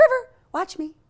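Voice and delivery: cheery, bright voice, very high and loud. Speaking to river to show off a happier, bright voice. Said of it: "when I use a little happier voice".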